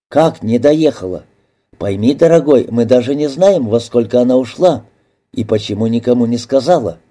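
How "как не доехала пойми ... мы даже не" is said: ordinary delivery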